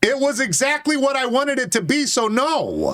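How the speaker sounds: high, heated angry yelling. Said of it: "Why are you yelling?".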